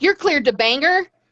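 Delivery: put-on quick, high-pitched Texas accent. Retelling clearing a flight crew to Bangor, Maine, in a Texas accent. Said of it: "my Texas accent decided to rear its ugly head".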